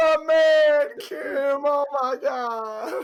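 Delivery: loud, high mock sobbing.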